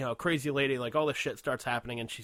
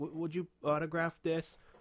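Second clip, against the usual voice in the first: put-on meek, timid, shy little kid voice; 4 semitones higher than usual. Retelling a kid going up to the microphone at a screening, imitating a timid kid. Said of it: "there was that like timid kid".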